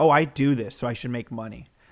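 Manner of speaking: mock tantrum, whining voice. Imitating people who expect money for what they do: imitating someone throwing a tantrum. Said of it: "throwing a tantrum fit".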